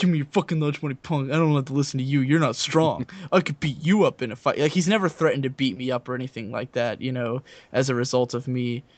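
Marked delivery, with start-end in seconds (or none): 0.0-4.6 menacing, tough, threatening jock bully voice. Describing how a jock guy could talk to the speaker, imitating a tough jock bully. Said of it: "as a jockey guy, he could just be like".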